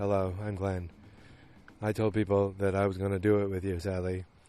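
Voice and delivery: soft, droning, flat, one-note monotone. Retelling what Glenn said to Sally, imitating Glenn's monotone voice. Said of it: "a wonderful, uh, you know, monotone voice".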